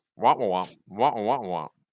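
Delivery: muffled droning wah-wah sound. Describing how gas-mask players sound to teammates, in a Charlie Brown teacher voice. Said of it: "sound like the teacher from Charlie Brown".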